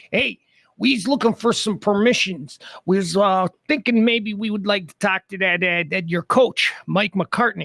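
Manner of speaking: put-on Chicago man's accent. Acting out the guy from chicago on a phone call, in a chicago accent. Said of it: "it's going to have a Chicago accent".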